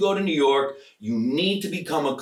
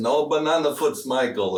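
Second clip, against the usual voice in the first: put-on, attempted Russian accent. Remembering his academy ballet teacher, quoting him; attempted russian accent. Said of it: "my attempt at, I don't know, a Russian accent".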